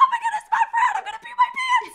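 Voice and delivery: shrill, booming, very loud, high-pitched yell. Telling the listener how they yelled when the door opened: retelling a yell. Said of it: "you yelled".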